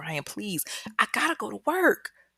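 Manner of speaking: put-on, high, begging, pleading voice. Retelling a captive woman's plea to her captor: imitating someone pleading. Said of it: "she's pleading with him".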